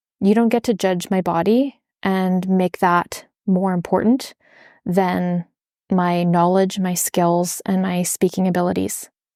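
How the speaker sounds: usual speaking voice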